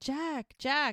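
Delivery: play-acted high, urgent yelling. Recapping a scene, the speaker retells Mel yelling. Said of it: "And then Mel's yelling".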